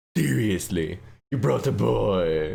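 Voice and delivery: rasping, creaky, drawn-out put-on villain voice. Deciding to do evil for this one, in a put-on evil voice. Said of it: "I think I'll do evil for this one".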